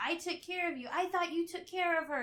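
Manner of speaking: shrill, very high-pitched, loud, flipping-out angry yelling. Retelling a scene where a character yells at the CEO: imitating a character yelling. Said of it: "yelling at the C E O".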